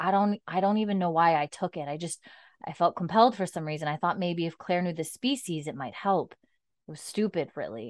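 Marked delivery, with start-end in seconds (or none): none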